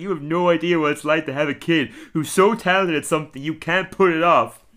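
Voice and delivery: tearful crying. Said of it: "Homer starts crying".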